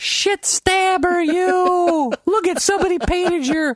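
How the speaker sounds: very high, slow, squeaky mocking voice.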